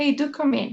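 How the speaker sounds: nice, friendly, inviting, welcoming tone. Inviting someone over, showing the nicer way to say it: nicer, welcoming tone. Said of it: "So that sounds nicer".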